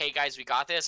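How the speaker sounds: plain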